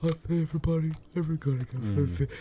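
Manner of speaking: unsettling, high-pitched put-on voice. Joking about a voice bit: Ed Gein voice. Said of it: "that freaking Ed Gein voice".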